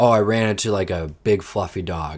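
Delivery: ordinary talk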